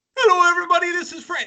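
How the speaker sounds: very high-pitched, loud weather presenter announcing voice. Imitating a weather reporter's greeting: Frankie McDonald impression. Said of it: "I do a bit of an impression of him".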